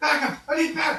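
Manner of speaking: gruff dwarven holler, pitched very high and loud. Describing a scene, the speaker voices someone down the hall calling for backup, gruff dwarven yell. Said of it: "a gruff dwarven voice from down the hall yelling for backup".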